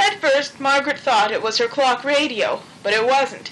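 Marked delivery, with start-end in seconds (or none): none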